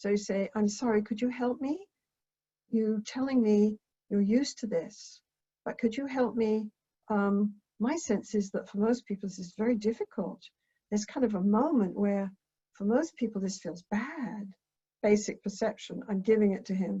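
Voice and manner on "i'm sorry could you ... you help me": gentle, soft, lowered voice. Demonstrating how to ask someone for help, dropped voice, going soft. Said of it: "You drop your voice, you go soft".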